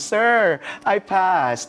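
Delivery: excited delivery.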